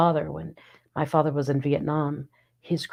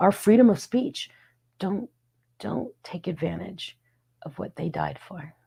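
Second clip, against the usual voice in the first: voice breaking mid-phrase, choked up, halting, emotional; 4 semitones higher than usual. Speaker about to introduce herself on the show, getting emotional. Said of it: "I'm about to get incredibly emotional".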